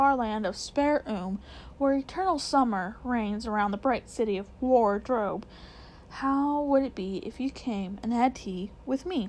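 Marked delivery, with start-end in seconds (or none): none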